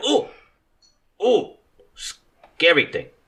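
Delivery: frightened frog creature voice. Voicing a frog creature that looks at the pillar: frightened frog creature voice. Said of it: "it looks at the pillar and is like".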